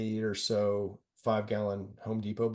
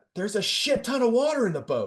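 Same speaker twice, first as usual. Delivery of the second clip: very high, swooping, loud shouted call; 13 semitones higher, 7 dB louder than usual. Retelling how a crewmate yelled out from the rowing boat; retelling a yell. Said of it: "basically yelled out".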